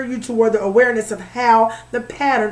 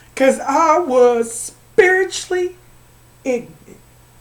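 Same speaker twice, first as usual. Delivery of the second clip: tearful, crying while talking, higher; 3 semitones higher, 3 dB louder than usual. Talking about losing people who died, crying while talking. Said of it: "I can't believe I'm crying".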